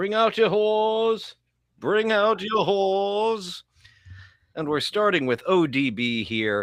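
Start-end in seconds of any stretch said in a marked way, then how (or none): 0.0-3.6 comic medieval town crier call, pitched-up. Greeting a co-host, then calling out in Monty Python and the Holy Grail style. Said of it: "reading that in a uh, Mighty Pyth- Python and the Holy Gra- Grail way".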